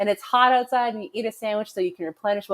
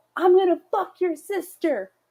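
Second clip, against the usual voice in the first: put-on very high, shrill little boy's yell; 9 semitones higher than usual. Retelling what a boy yelled from the top of a water slide: imitating a boy yelling. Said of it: "one little boy that yelled out".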